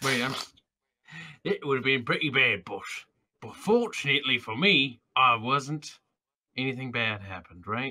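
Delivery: fantasy orc voice. Answering in character after a worried question about being alone: talking like an orc. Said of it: "Why is he talking like a fucking orc now?".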